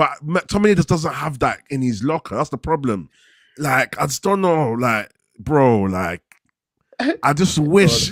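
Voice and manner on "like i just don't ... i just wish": slow halting stutter with stumbling, broken-off false starts. Arguing about a footballer's midfield role with friends, stuttering. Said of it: "Look, I'm stuttering, bro".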